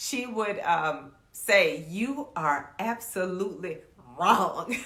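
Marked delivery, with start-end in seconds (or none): 1.9-4.7 mock slow, venom-laced delivery. Retelling how a strict teacher answered a wrong reply: imitating a teacher saying it with venom. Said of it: "She would just say it with such venom".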